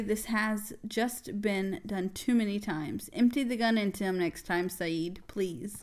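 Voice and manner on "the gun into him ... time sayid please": normal talking voice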